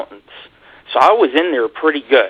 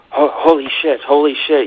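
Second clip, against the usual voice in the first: put-on fright, stammering and tripping over words; 3 semitones higher than usual. Retelling a cameraman's reaction to a dog: imitating Jag Osborne acting scared. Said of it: "acting all scared".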